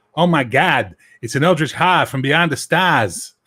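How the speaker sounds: loud put-on Boston accent. Showing how a Lovecraft character should sound: Boston accent. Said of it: "giving all the characters Boston accents".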